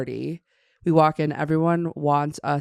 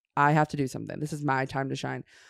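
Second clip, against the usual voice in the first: ordinary delivery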